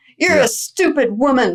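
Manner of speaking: play-acted yell, mild and held back. Retelling how the guru insulted her: imitating the guru yelling. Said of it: "he would yell at us".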